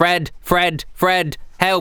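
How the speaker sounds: very slow, high, drawn-out, pleading lizard creature cry. Voicing a lizard creature who turns around: lizard calling for help. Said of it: "The lizard turns around and goes".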